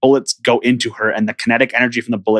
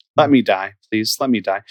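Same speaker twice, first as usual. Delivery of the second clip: acted, utterly beaten-down, sorrowful tone. Quoting her, the speaker retells the line in a sad, defeated tone. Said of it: "she says it in like such a sad".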